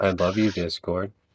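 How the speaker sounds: mechanical, machine-like robotic voice. Recording with friends after a long discord wait, in a robotic voice. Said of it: "why did you say that so robotically?".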